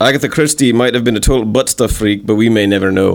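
convincing, put-on Scottish accent. Showing off an accent, speaking in a scottish accent. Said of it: "That was just a really surprisingly good Scottish accent".

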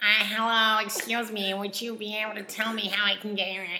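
put-on strong American accent. Retelling the scene where he hears Brianna's voice, strong American accent as Brianna. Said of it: "He hears very strong American accent".

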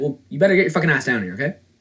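rapid-fire, fast, rattled-off delivery. Retelling a field manager swearing at you on the phone, said really fast. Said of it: "He said it really fast".

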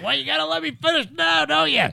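very high, scratchy, creaky oddball voice. Retelling what he told the Army Corps of Engineers, imitating his voice. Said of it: "In that voice, too".

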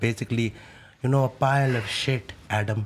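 put-on weird Indian accent. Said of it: "the weird accent thing you can do".

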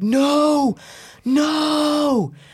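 very high, pained, drawn-out anguished yell. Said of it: "like yelling".

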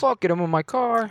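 bad, high-pitched fake Pittsburgh accent sliding toward New York. Chatting with co-hosts, putting on a bad Pittsburgh accent. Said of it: "This is like the worst Pittsburgh accent ever".

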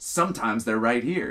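snappy, quick, snapping delivery. Retelling a trainee coworker's reply at a terminal: imitating a coworker snapping. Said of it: "he fucking snaps at me".

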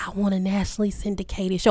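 soft, hushed, secretive half-whisper. Recalling being afraid to admit a podcasting dream, half-whispering. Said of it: "I'm whispering it".

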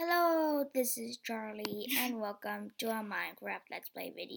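very hushed, rough, creaky voice. Showing how an old video intro sounded: imitating own old video intro. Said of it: "this is what it sounded like when I said".

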